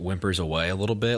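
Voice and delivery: plain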